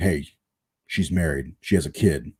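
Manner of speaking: deep threatening voice. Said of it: "Use my deep voice".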